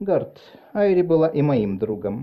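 ordinary delivery

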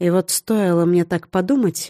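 ordinary delivery

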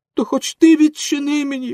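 very high, loud, begging, pleading cry. A character begs the girl at the window who says everyone has died, in a pleading cry. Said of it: "благально, закричав Пінокіо".

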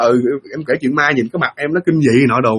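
plain

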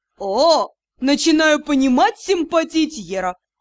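taunting, derisive, sneering delivery. Reading a lord's remark after the narrator speaks: mocking. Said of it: "насмешливо сообщил Алсер".

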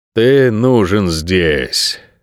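weary, tired voice. In an argument with an irritated companion, the fox repeats himself, wearily. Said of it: "устало повторил лис".

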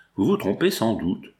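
ordinary delivery

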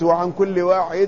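plain

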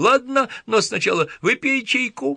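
tiny, high, thin little babbling voice. Richard, playing with toy trolls, voices the green-haired one: babbling in a thin little voice. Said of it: "пролепетал тоненьким голоском".

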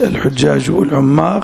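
plain

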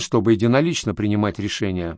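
ordinary delivery, nothing marked

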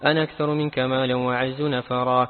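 ordinary delivery

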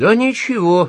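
high-pitched, shrill, loud, caustic sarcastic jab. The narrator answers Archie's question about what will happen, sarcastically. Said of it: "язвительно сказал я".

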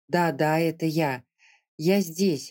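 plain

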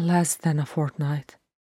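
plain reading voice

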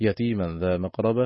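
normal talking voice

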